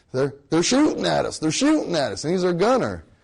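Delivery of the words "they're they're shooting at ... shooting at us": put-on hickish southern country accent, swooping pitch. Retelling what their gunner said, in a southern hickish kind of voice. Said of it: "he said it in a southern kind of, you know, kind of hickish kind of voice".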